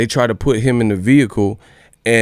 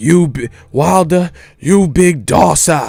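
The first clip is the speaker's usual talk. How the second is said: put-on UK accent, drawn out; 5 semitones higher than usual. Mocking UK slang aimed at Wilder: imitating Tyson Fury. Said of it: "Ain't no American talk like that".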